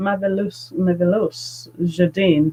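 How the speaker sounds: put-on French accent with French flair. On camera, trying to pronounce a name: imitated French accent. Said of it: "I hope that was a good impression of a French person speaking".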